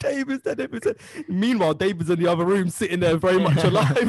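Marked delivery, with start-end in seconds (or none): 0.0-1.0 play-acted very high, tearful, wailing cry. Retelling a Celebrity Big Brother moment, a woman running around: imitating someone crying.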